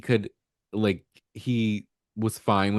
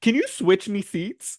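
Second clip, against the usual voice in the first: mock very high, peeved, cross, funny-sounding voice; 10 semitones higher than usual. Retelling what she said during a story, imitating someone mad. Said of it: "she says it kind of funny. because she's so mad".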